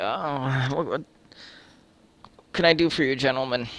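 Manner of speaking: put-on just-woken voice. Telling a story, acting out a man answering his door, imitating a just-woken man. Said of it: "He's rubbing his eyes".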